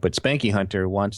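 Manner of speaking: ordinary talk, nothing marked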